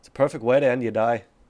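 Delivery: put-on Australian accent, inflection at the end. Showing the phrase used to get into the accent: performing an accent. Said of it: "in the accent".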